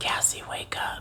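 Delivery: eerie, creepy, breathy whisper, barely voiced. Speaker recounting a voice calling their name to wake them, retelling a creepy whisper. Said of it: "I hear a creepy whispering voice".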